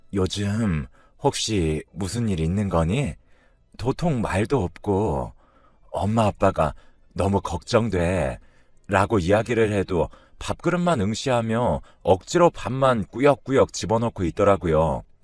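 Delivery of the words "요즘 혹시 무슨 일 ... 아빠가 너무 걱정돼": gentle, careful and slow delivery. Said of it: "제가 조심스럽게".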